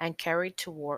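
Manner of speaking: ordinary delivery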